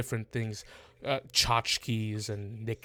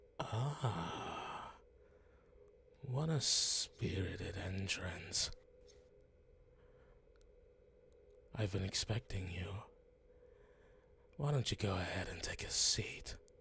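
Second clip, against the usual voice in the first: put-on lurking shadow creature voice; 3 semitones lower, 9 dB quieter than usual. Voicing a shadow figure with purple eyes greeting a visitor: new voice for a shadow figure. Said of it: "Have I heard this voice before".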